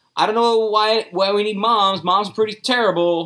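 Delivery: high, mild put-on yell.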